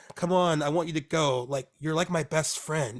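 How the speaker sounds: wheedling, pressuring, manipulative coaxing tone. Retelling a film scene, quoting Rebecca's manipulative coaxing. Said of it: "it sounds like complete manipulation".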